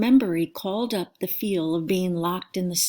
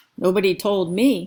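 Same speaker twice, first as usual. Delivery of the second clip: raised, growling voice; 5 dB louder than usual. In a story read aloud, a man at a table complains: growling. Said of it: "he growled".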